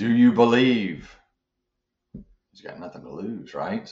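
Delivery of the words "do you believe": mock loud voice booming from on high. Telling a joke, voicing a voice calling down from above: booming voice from above. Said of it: "he hears a voice boom down".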